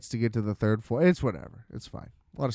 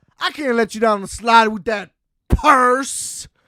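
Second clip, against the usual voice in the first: loud, very high, exaggerated mock attendant voice; 9 semitones higher, 5 dB louder than usual. Retelling what the slide attendant said about the purse: imitating an exaggerated delivery. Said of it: "it was so exaggerated".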